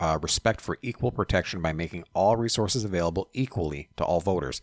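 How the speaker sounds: ordinary talk, nothing marked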